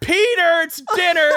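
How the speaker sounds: very high, loud calling yell. Retelling how a mom called her kid in: imitating a mom yelling. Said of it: "a normal mom just yelled".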